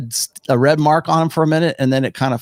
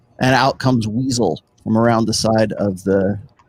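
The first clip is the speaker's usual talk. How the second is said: normal talking voice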